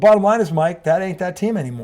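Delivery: ordinary delivery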